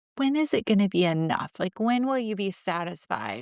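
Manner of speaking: plain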